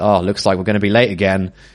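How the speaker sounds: normal talking voice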